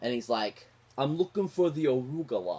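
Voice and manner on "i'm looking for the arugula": put-on wiseguy New York mobster accent. Quoting a favorite comedy line, Steve Martin New York mobster accent. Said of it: "this mobster guy that's like New York".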